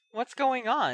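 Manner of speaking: wary, suspicious tone. Entering a room where everyone stops and looks at her: suspicious question. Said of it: "she asked suspiciously".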